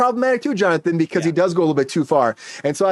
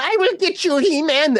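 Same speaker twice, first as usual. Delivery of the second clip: very high, slow, drawn-out villain yell; 9 semitones higher than usual. Imagining an actor as Skeletor yelling at everybody: imitating Skeletor yelling. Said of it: "yell at everybody and call them".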